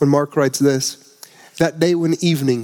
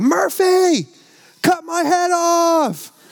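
put-on very high, slow little toddler voice, "off" drawn out. A parent retelling what one of their little boys said, in his little toddler voice. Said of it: "I hear his little toddler voice go".

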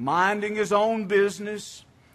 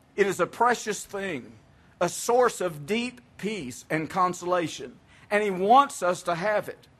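slow, careful, deliberate reading. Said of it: "I'll read this slowly because it's deep".

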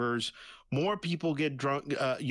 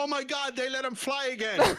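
mock very high screamed cry; 11 semitones higher than usual. Imagining a prank on a plane after the captain's announcement, mock screaming. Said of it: "get up screaming down the hall and say".

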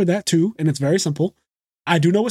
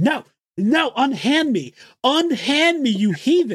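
put-on child voice, high, drawn-out screaming; 7 semitones higher than usual. Recalling being dragged to the bathroom as a young child, retelling screaming protests. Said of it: "kicking and screaming like".

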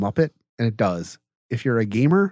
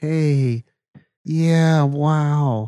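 put-on dazed, high California surfer girl voice, wow drawn out; 4 semitones higher, 4 dB louder than usual. Describing an actress in other movies: imitating a spaced-out California surfer girl. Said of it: "a spaced out California surfer girl, obviously high on drugs".

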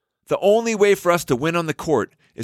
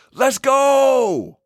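loud, high, high-energy cheering yell. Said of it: "I can't say it with lower energy".

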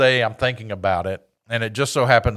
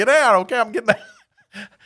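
panicky, higher-pitched voice; 12 semitones higher than usual. Speaker recounting a man running at them screaming orders, retelling own panic. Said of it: "I was just like panicking".

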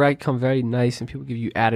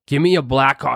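mock-rude, angry-sounding delivery; 3 dB louder than usual. Retelling what a guy said to the staff, imitating him mad rude. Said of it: "like mad rude".

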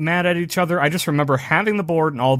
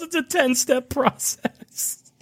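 mock yelling, higher pitch; 10 semitones higher than usual. Retelling a scene where he yells the line: imitating someone yelling. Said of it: "He yells".

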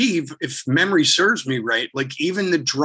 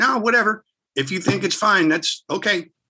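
acted tone with a light touch of sarcasm; 6 semitones higher than usual. Retelling what he said in the control booth, with a little sarcasm. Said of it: "there was a little sarcasm in there".

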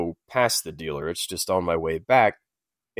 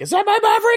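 play-acted giddy, girly scream, very high; 6 dB louder than usual. Describing someone waiting for their truck, the speaker imitates giddy girly screaming. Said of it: "you're doing your little giddy girly screaming like".

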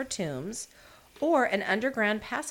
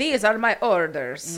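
loud, bad French accent slipping into Italian; 8 dB louder than usual. Retelling the king giving his orders, in a bad French accent. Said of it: "I don't know why it didn't sound French at all".

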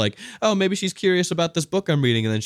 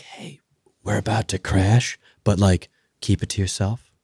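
put-on calm whisper, much lower; 3 semitones lower than usual. Speaker acts out a hypothetical flight attendant's line, mimicking a calm whisper. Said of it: "really calmly whispers".

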